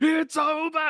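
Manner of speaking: mock excited commentator-style yell. Retelling a commentator's excited knockout call: imitating Lennox Lewis's excited yell. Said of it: "never excited whatsoever, ever until the one".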